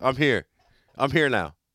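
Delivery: normal talking voice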